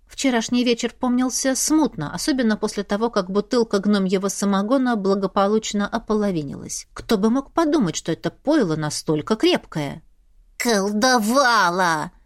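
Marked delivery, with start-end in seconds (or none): 10.5-12.0 furious, angry hiss. A familiar scolds the narrator about last night, with an angry hiss. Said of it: "рассерженно зашипел фамильяр".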